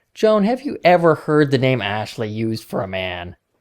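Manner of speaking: mocking, sarcastic tone. Retelling a father's question to the mother: imitating a sarcastic question. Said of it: "he sarcastically asks my mom".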